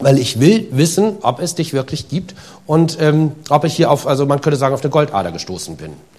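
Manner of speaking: ordinary delivery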